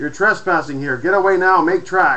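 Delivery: loud, curt, brusque snap. A stranger orders intruders off his island: snapping. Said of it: "he snapped".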